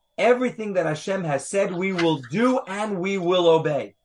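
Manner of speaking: plain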